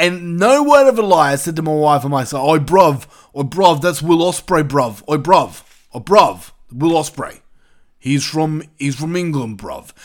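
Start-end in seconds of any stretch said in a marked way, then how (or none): 2.5-9.9 put-on English accent. Retelling an answer to the wife watching along: imitating Will Ospreay's speech. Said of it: "that's how he speaks. He says bruv a lot".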